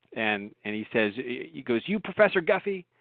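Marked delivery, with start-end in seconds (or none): 1.9-2.8 put-on heavy Southern accent laid on thick, pitched up. Retelling an out-of-the-blue phone call from a stranger; thick Southern accent. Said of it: "this guy with a thick Southern accent".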